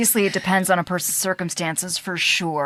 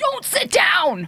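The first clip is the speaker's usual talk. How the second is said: mock sudden scream, very high-pitched shriek; 11 semitones higher than usual. Retelling a grandmother's warning in a zoo toilet: imitating grandmother screaming. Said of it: "And she just screamed".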